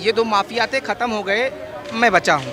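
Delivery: ordinary talk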